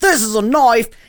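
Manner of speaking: approximate, attempted Australian accent. Speaker demonstrating the only accent they can do, Crocodile Dundee Australian accent. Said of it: "that's as close as I can get to an Australian accent".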